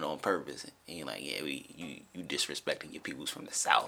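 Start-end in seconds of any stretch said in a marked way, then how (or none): 1.2-3.9 low, mock-playful, jokey teasing tone. Retelling what he said while frying bacon in the morning, retelling a joking jab. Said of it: "he jokingly doing it".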